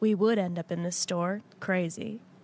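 low, dead-level, flat deadpan monotone. Retelling a moment from a TV episode, imitating Jed's monotone voice. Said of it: "Cut to Jed in the most monotone voice ever".

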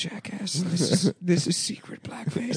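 whispered voice. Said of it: "Why do you keep whispering".

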